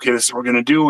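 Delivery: whispered voice. Retelling how Michelle planned the surprise party: imitating Michelle whispering. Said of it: "Michelle's kind of whispering".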